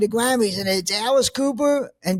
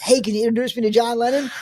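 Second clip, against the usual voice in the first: usual speaking voice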